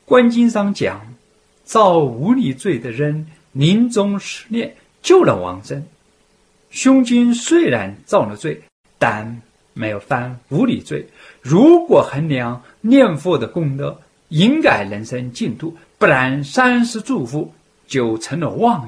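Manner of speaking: loud, insistent voice.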